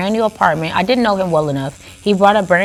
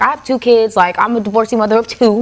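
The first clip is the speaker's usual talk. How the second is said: acted, annoyed, irritated and fed-up tone; 3 semitones higher than usual. Retelling what she finally told a man who kept texting her, retelling irritated reply. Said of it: "I got like irritated one day".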